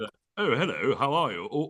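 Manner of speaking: American-style British accent. Discussing how Americans imitate Brits; Americans doing a British accent. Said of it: "Americans do Brits being".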